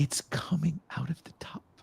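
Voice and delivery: hushed, weepy, breathy, tearful crying speech. Retelling a crying stranger's complaint: imitating someone crying. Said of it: "she started crying".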